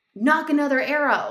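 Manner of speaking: mock, high, urgent shouted yell. Retelling how Luke reacted right after you shot, imitating someone screaming at you. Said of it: "he's screaming at me".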